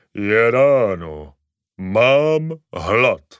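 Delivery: deep-voiced talking crocodile voice. Narrator reading a story, the crocodile on the pajamas speaks in a deep voice. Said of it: "krokodýl ožívá a hlubokým hlasem pronese".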